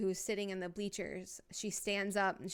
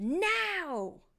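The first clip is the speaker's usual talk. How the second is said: unsettling, very high, shrill, drawn-out eerie shriek; 10 semitones higher, 4 dB louder than usual. A game narrator voicing a character urging a hesitant woman, eerie scream. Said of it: "you just hear this like eerie scream".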